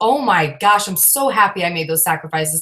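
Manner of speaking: usual speaking voice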